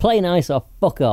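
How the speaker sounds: loud, high-pitched, acted-out yelling shout. Retelling what a friend shouted at people fighting over dominoes: imitating a shout. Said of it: "so he'd shout at them".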